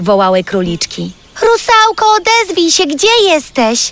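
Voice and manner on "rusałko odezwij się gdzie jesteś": very high, loud shouting cry. Running after his daughters to the field's edge, he calls for the missing friend, shouting. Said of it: "Krzyczał Urwis".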